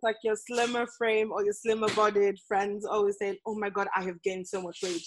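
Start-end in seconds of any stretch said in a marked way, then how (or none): 3.5-5.0 put-on fear and disgust, much quieter. Imitating slimmer-bodied friends, with mock fear and disgust. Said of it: "you can hear the fear and disgust in their like voice".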